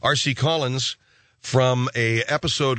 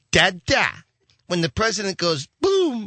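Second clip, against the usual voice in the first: put-on high, sing-song little baby-talk voice; 8 semitones higher than usual. Quoting a man's line the way he said it, Vernon Dozier's little baby voice. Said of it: "he was doing that little baby voice".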